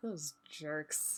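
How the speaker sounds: very quiet, low, hushed mutter under the breath. Waving goodbye in character, then muttering under the breath. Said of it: "under my breath".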